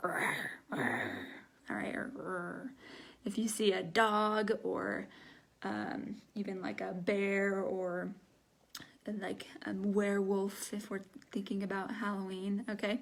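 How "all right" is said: low, whispered animal growl. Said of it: "it means kind of this sound".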